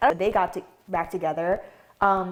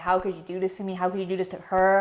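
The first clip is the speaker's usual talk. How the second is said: put-on tearful, crying voice; 3 dB quieter than usual. Retelling own words to an ex on a recording: imitating own crying plea. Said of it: "I'm literally bawling, I'm crying".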